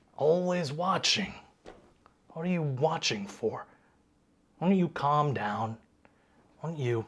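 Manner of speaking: put-on voice of an elderly man. Voicing an older man on a farmhouse porch: older man voice. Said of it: "older human man".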